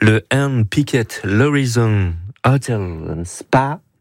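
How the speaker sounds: put-on careful, slow English-accented speech.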